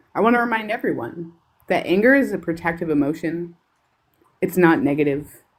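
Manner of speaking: measured, calm, controlled, even-tempered anger. Speaking up as a mother to the group, in her calm angry voice. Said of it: "this is my um, calm, angry voice".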